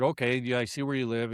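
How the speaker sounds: usual speaking voice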